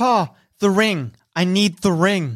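calling out with projected voice. Narrating a scene, voicing Zandala as she calls out to her papa. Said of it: "she calls out at Artist Simber".

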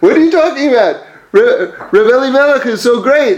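heated, upset tone, put-on yelling. Retelling a story where a visitor gets upset: imitating someone yelling. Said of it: "he starts yelling at him like".

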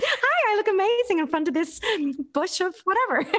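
terrible fake American accent, very high and loud. Stereotyping a type of influencer, in a really bad American accent. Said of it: "I have to do a really bad American accent".

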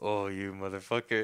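mock-annoyed, exasperated exclamation. Recalling being called inept after a show, retelling own annoyed outburst. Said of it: "I remember I was just like so annoyed".

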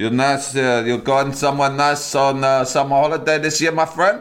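put-on Greek and Turkish accented speech. Pretending to be his own barber in the mirror, chatting in a Greek-Turkish accent. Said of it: "Greek slash Turkish accent".

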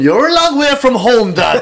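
put-on Kerry accent.

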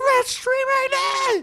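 screamed at the top, very high and loud. Retelling an audition heard from the waiting room: imitating Kevin Tinkin screaming. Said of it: "just screaming at the top".

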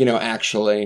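ordinary talk

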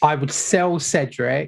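normal talking voice

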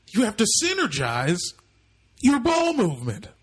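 pumped-up, high, swooping voice. Guessing how a tech team owner sounds: Steve Ballmer impression. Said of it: "I imagine it's something like this".

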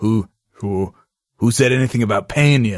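very low, dropped machine-like voice pushed lowest. Quoting a heartless killing machine's one-liner: low Yul Brynner voice. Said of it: "I can't get my voice that low".

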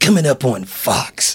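slow, exciting, mysterious, dramatic tv promo announcer voice. Imitating a network announcer on fox: exciting, mysterious tv announcer voice. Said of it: "everything sounds exciting and mysterious".

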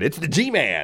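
really bad, excited voice. Imitating the radio host's catchphrase: excited G. Gordon Liddy impression. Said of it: "voice sounds like this".

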